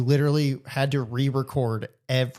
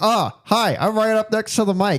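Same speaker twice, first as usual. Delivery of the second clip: play-acted high, drawn-out shouting right against microphone; 8 semitones higher, 3 dB louder than usual. Describing how one woman sounds in a film, imitating yelling into the mic. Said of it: "It sounds like this".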